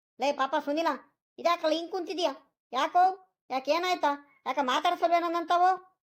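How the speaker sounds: shouting. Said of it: "ಯಾಕ್ ಹಿಂಗ್ ಕೂಗ್ಕೊಂಡ್ತಿದ್ಯಾ".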